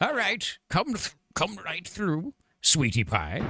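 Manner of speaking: put-on very high-pitched old grandma voice. Speaking in character to the other speaker, in a grandma impression. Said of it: "You're getting better at the g- grandma impression".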